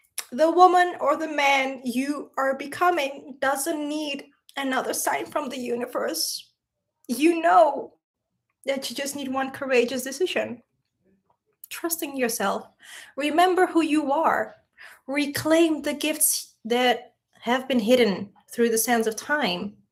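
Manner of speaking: speaking through tears. Leaving listeners with a closing message while crying, in a tearful voice. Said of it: "I can't stop crying today".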